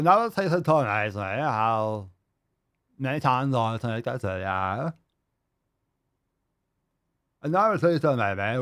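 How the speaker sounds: broken-jaw voice, jaw held stiff. Mocking how someone sounds: mocking broken-jaw voice. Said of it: "this is how you sound when your jaw is just broken".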